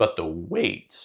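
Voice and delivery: voice breaks on the words. Explaining something to a co-speaker in conversation; voice cracking. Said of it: "excuse my voice crack".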